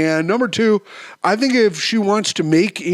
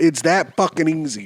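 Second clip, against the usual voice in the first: ordinary delivery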